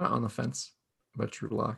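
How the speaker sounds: put-on soft, stoned-sounding voice. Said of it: "my Denver accent would be just making sure".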